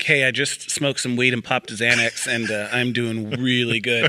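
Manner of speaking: ordinary talk, nothing marked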